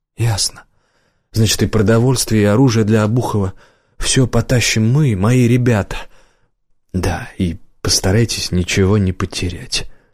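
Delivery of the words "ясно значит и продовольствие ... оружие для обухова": ordinary delivery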